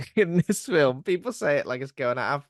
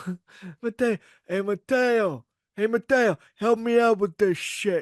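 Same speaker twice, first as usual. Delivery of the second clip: clumsy, bad fake New York-ish accent, pitched up; 6 semitones higher than usual. Podcast host recounting a character calling for Mateo, imitating Jon Voight's bad accent. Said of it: "I apologize in advance for the accents because John Voight is knocking out a bad accent".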